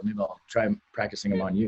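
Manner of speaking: under-the-breath mutter, very low and very quiet. Replying in character after the attacks are mocked: muttered under one's breath. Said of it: "under my breath".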